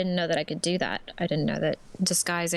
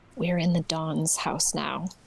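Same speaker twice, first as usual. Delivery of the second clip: whispered, in character voice. Speaking in character, turning aside to the others: whispering in character. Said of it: "I whisper si-, uh, to the side".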